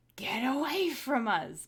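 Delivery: loud booming hiss. Intimidating a starving cougar in character with a booming voice: hissing loudly.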